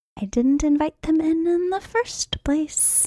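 very high-pitched mumble under the breath. Goldie answers a warning about apparitions with her head down, muttering under breath. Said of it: "mutters under her breath".

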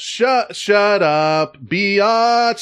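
sing-song high-low-high bouncing cadence. Explaining how a sketch line sounds: imitating high-low-high cadence. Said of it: "the whole cadence of it".

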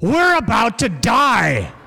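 mock high, swooping call, "die" drawn out. Retelling John waking Jesus in the middle of the storm, calling over a storm. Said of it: "this must have been the tone of voice he used".

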